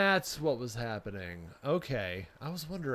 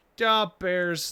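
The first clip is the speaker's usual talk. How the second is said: put-on Chicago accent with raised voice; 6 semitones higher, 8 dB louder than usual. Joking about Chicago sports teams, the speaker uses a Chicago accent. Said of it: "I was even doing the Chicago accent".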